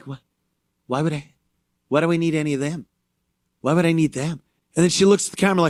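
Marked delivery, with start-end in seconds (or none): 0.1-4.4 woman's voice with a questioning tone. Retelling a woman's reply to a question about Trump voters: imitating a woman leaning in. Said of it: "She leans in like".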